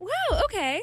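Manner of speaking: encouraging, supportive tone. Asked by the group to say the phrase in a supportive way, supportive tone. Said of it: "and supportive, you said?".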